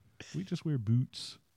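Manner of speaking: put-on bad Canadian accent. Imagining a Nine Blades listener reacting to the talk, in a bad Canadian accent. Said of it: "I don't have a good Canadian accent".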